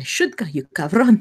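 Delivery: harsh, rasping whisper. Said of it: "She she kind of whispers harshly".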